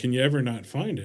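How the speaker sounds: usual speaking voice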